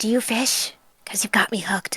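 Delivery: soft, covert, close whisper. Playing a character flirting covertly, whispering a pickup line into his ear. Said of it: "she's going to whisper into his ear".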